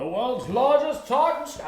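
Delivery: very high, loud, dramatic announcer voice. During a chat, the speaker slips into an old announcer voice. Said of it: "I'm doing my old announcer voice".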